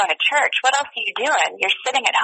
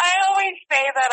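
talking through laughter, words pitched up; 9 semitones higher than usual. Answering a question about doing a rom-com, laughing while talking. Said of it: "sorry, I'm just laughing".

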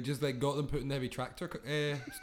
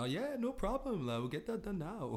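put-on German accent leaning Scandinavian, pitched up; 5 semitones higher, 4 dB quieter than usual. Retelling a German guy's reply in a story, put-on German accent. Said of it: "Is that a good German accent?".

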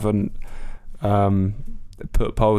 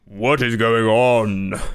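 grand heroic deity voice; 3 dB louder than usual. Playing a questions game, walking in on a sandwich: Thor accent. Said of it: "gonna go for the Thor, uh, a-, accent".

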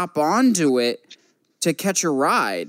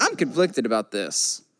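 plain

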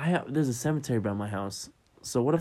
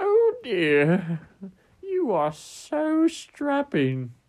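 put-on very high, very slow, drawn-out old lady voice; 10 semitones higher, 5 dB louder than usual. Asked to do an old lady voice, delivering a line in put-on old lady voice. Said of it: "Was I supposed to do an old lady voice?".

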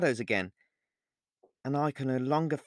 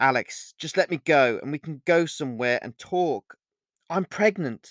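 ordinary delivery

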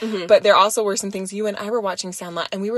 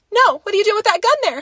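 put-on panicked voice, higher and louder; 13 semitones higher, 5 dB louder than usual. Retelling Phoebe watching a movie's ending: imitating Phoebe freaking out. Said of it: "starts, like, freaking".

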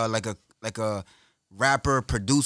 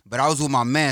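usual speaking voice

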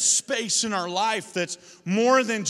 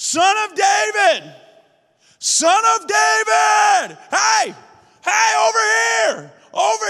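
mock yelling, higher and louder; 11 semitones higher, 8 dB louder than usual. Retelling a Bible story, acting out Bartimaeus calling to Jesus: imitating Bartimaeus yelling. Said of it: "he begins to yell".

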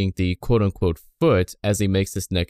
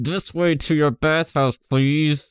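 high voice, words forced through clenched teeth; 6 semitones higher than usual. Describing an anime's subtitled characters, quoting their line by imitating talking through teeth. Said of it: "talking through their teeth".

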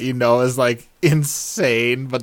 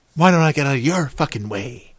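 mock abrupt switch from calm to a sudden angry outburst; 2 semitones higher than usual. Describing a man who talked normally, then turned mad; imitating a sudden mad outburst. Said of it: "he kind of talked normal, and then he would be like".

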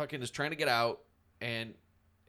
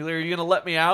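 put-on terrified, pleading voice; 4 semitones higher, 10 dB louder than usual. Speaker retells a scary scene, quoting a frightened man: imitating utter fear. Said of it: "You hear utter fear in his fucking voice".

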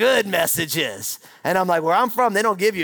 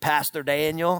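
put-on Southern preacher voice, lower pitch; 3 semitones lower, 4 dB quieter than usual. Recalling a friend's phone call inviting him to preach, imitating Pat. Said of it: "He's a real Southern preacher".

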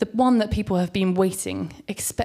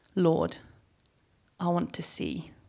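unhurried, deliberate, slow, hushed delivery; 6 dB quieter than usual. Retelling the Bible story of the man Jesus heals, speaking his words slowly. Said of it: "he says slowly".

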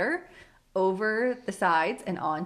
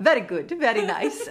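fake Russian accent slipping in, raised; 5 dB louder than usual. Retelling what Ashley started to say to the plumber: imitating a put-on Russian accent. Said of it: "in a Russian accent".

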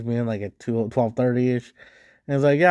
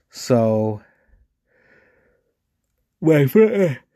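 speaking through a yawn; 5 dB louder than usual. Telling a story about getting off work, yawning. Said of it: "sorry, yawning".

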